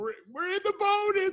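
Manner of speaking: very high, loud screaming call. Retelling screaming at the coaches from the stands: retelling own screaming. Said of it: "and I'm screaming and screaming".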